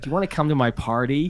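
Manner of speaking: put-on American accent, doll-play voice. Retelling how Harriet plays with her dollies: imitating Harriet's American accent. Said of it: "They're all freaking American".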